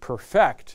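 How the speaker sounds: perfect stressed on the second syllable, per-FECT. Legal lesson on perfect as a verb, stress on second syllable of perfect. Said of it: "make sure you emphasize the second syllable".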